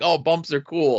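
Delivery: ordinary delivery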